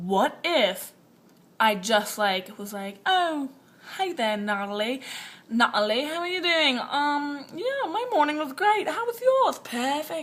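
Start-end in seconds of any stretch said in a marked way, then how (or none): 3.1-10.2 put-on posh British accent. Imagining greeting someone at school, in a put-on British accent. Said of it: "British accents".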